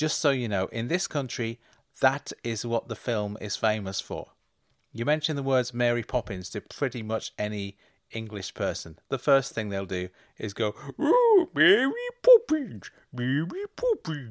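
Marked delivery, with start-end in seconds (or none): 11.0-14.3 pitched way up, slow, swooping, silly, bad cockney. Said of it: "That's them doing the stupid voice".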